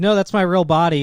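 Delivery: ordinary delivery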